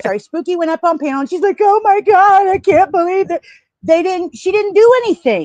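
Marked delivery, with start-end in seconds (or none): 1.6-4.4 high, loud, weepy sobbing voice. Retelling how someone reacted on a panel: imitating someone crying. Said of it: "she is crying and trying to gain sympathy".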